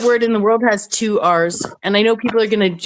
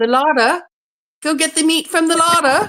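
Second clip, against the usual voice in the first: pitched-up British English accent on "larder"; 7 semitones higher than usual. Showing how an English accent says the word: English accent. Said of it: "any other English accent sounds like larder".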